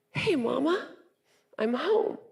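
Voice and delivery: put-on small, high little-boy voice. A mother imagines him walking back through her front door: his little voice. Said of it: "in that little voice like you heard".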